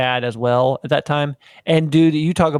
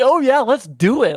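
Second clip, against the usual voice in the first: put-on bubbly, perky, very high-pitched eagerness; 10 semitones higher than usual. Recalling replying to someone's bible study idea, retelling a perky reply. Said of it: "And I'm like all perky".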